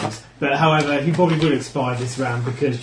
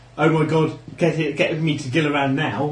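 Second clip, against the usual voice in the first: ordinary talk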